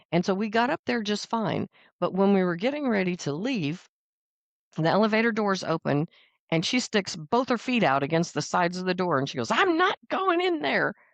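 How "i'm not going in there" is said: mock, very high-pitched, insistent yelling. Retelling how mom refused to enter the elevator: imitating mom yelling. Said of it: "and she's just yelling".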